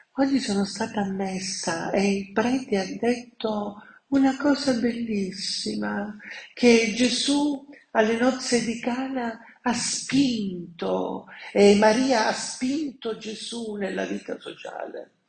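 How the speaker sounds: high, mock-blissful, put-on voice.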